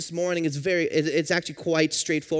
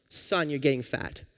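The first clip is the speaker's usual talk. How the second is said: mimicked gentle, kind voice; 3 semitones lower, 4 dB quieter than usual. Retelling what his mom said when he got home, imitating mom's kind tone. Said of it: "says in the most kind way possible".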